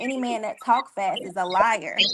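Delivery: plain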